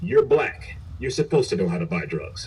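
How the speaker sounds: normal talking voice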